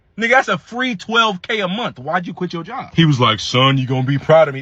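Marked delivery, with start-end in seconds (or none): 3.4-4.6 put-on deep Panamanian-accented voice. Retelling what a man said about quitting his job, in a deep Panamanian voice. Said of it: "That's deep ass voice".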